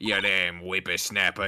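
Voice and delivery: put-on, fake Australian accent. Reading a courtroom scene's lines aloud in character: put-on Australian accent. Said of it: "whenever he puts on the Australian accent".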